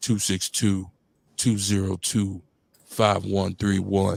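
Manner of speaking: slow, level, dragged-out chopped-and-screwed voice. Giving the call-in phone number to listeners: slow chopped and screwed voice. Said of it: "I'ma say it slowly in my chopped and screwed voice".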